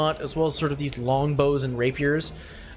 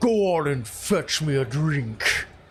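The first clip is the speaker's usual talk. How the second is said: large, big giant king voice. Narrator voicing one of the giant kin, in a deep giant voice. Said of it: "large, deepened voices there go".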